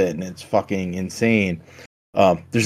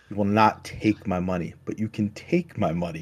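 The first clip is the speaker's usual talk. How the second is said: put-on sinister, menacing tone, quieter; 8 dB quieter than usual. Retelling how a man answered someone threatening to take his money, imitating a sinister threat. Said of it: "it's just so sinister, like the way he says it".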